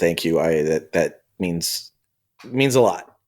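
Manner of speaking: quiet, low, slow voice. Kyan looks at Hank and thanks him: Kyan, speaking quietly. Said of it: "just kind of quietly says".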